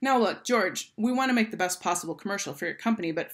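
ordinary delivery, nothing marked

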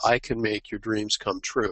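ordinary talk

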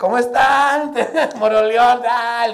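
loud, high, rousing shout. Retelling the moment he greeted Moroleón, shouting out. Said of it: "grité yo".

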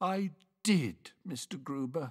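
sleepy, drowsy, half-asleep voice. Paddington answers mr. gruber's question about the concert on the drive home, sleepy. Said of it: "said a sleepy voice".

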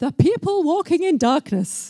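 very posh announcer voice. Recalling a voice on the radio reading a carol verse, really posh voice. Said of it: "Really posh voice".

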